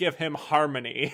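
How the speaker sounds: loud, sarcastic, mocking delivery. Retelling a character's line from a film: imitating a mocking tone. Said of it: "in that, like, mocking tone".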